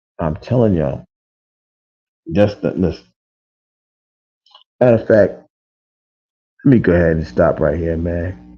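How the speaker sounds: sad, pained, sorrowful voice. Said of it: "hear it in my voice, the sadness and the pain".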